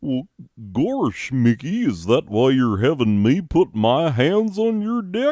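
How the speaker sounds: big, swooping cartoon dog voice. In a Disney bit, answering Mickey's joke: Goofy voice. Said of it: "That's not even the goofy laugh".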